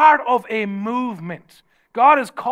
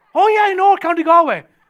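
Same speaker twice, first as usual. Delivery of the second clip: high, loud, smug know-it-all mock Irish voice. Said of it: "all the smug Irish people".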